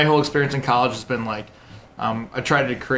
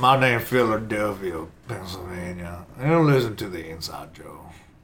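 southern accent from Alabama; 6 semitones lower, 4 dB quieter than usual. Giving the others a taste of the character Philadelphia: Alabama southern accent. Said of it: "he has a southern accent as if he's from Alabama".

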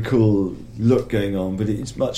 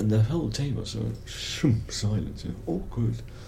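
normal talking voice

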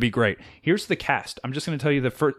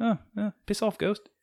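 put-on sleepy, half-awake, dismissive, slightly high voice; 8 semitones higher, 5 dB quieter than usual. Showing why a comic relief character is easy to do, imitating someone who sounds sleepy. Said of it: "he just sounds like he's sleepy".

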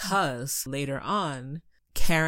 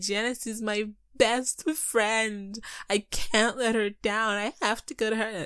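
tearful, crying voice, higher pitch; 8 semitones higher than usual. Retelling a plot where a character lies to her mother: imitating someone crying. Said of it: "full on, like, crying, being like".

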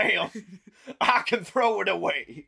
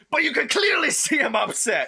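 raised, pitched-up voice; 6 semitones higher than usual. At a neighbors' meeting, [name] is told to settle down and answers in a raised voice. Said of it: "you're raising your voice".

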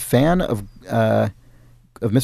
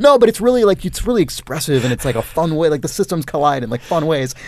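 ordinary talk, nothing marked

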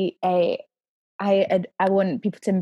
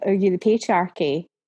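ordinary talk, nothing marked

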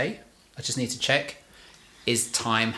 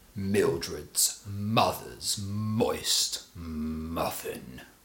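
very slow, grave delivery full of gravitas; 5 semitones lower, 4 dB quieter than usual. Repeating a vocal warm-up line after being asked for more gravitas. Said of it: "You need more gravitas".

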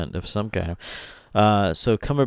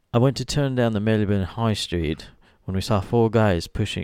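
put-on British accent. Telling a story quoted from him, trying his accent: Cumberbatch impression, British accent. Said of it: "this story goes a lot better in an accent, ... I'll try to do my best, Cumberbatch".

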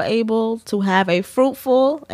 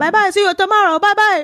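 put-on Dominican accent, higher and louder; 12 semitones higher, 4 dB louder than usual. Retelling what people outside a closing car shop say: imitating Dominican accent. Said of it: "Thank you for that rendition of, of their accent".

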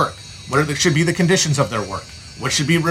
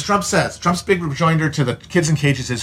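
normal talking voice

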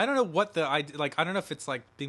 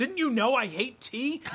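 very high-pitched, indignant flipping-out outburst; 9 semitones higher than usual. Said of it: "And he flips out".

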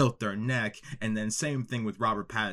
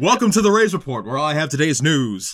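mock news-anchor voice; 6 semitones higher, 13 dB louder than usual. Opening a made-up news segment on the show, in an Anchorman voice. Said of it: "You got an Anchorman voice".

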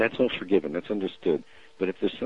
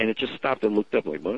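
ordinary delivery

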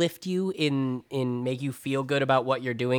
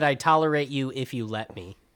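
ordinary talk

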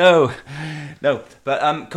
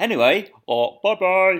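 goofy, silly voice, higher pitch; 6 semitones higher than usual. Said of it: "Very silly voice".

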